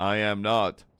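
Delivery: put-on flat monotone. Teasing the other speaker by copying their denial, in a mocking monotone. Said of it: "You're one continuous pitch".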